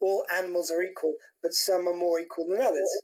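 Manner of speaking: ordinary talk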